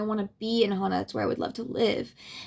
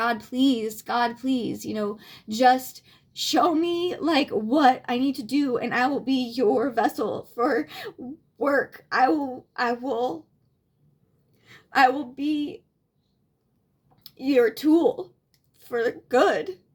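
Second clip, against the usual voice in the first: slow, weeping, tearful pleading; 2 semitones higher than usual. Retelling praying on knees in the jungle: imitating own crying plea. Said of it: "on my knees, like, crying, like".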